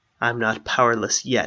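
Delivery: ordinary delivery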